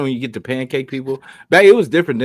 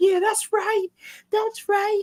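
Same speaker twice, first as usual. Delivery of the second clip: voice pitched way up, very high; 5 dB quieter than usual. Retelling a story others told about Troy, the speaker does Troy's high-pitched voice. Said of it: "like in that high pitched pitched".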